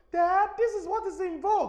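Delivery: very high-pitched voice, protesting. Showing how to voice both roles of an animation yourself: voicing the daughter. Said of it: "I'm just doing the drama for you".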